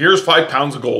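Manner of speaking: ordinary delivery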